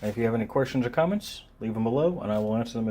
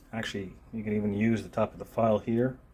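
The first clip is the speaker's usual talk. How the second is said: normal talking voice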